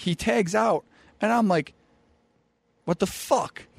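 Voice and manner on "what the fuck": put-on angry, furious outburst. Retelling a wrestling tag-out by a partner: imitating own angry outburst. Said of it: "I'm pissed off".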